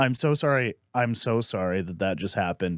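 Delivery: mock-empathetic, put-on sympathetic tone. Retelling how Brandon answered a weeping woman, imitating Brandon's empathetic tone. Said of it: "he went empathetic".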